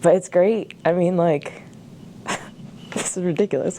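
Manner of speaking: tearful, choked-up voice breaking. In their last year on campus, speaker talks about the staff, choking up, crying. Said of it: "Why am I crying?".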